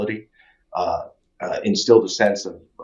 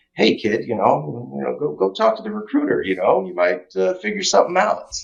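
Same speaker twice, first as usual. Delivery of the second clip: put-on voice, slight New Jersey accent, much higher; 7 semitones higher than usual. Speaker recounting what his dad told him as a kid, imitating dad with hint of jersey. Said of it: "trying to imitate him".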